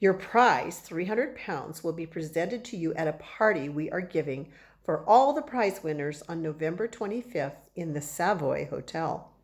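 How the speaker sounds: ordinary delivery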